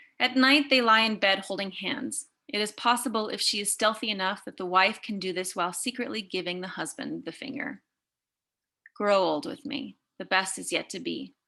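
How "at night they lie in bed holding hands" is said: plain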